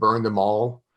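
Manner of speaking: usual speaking voice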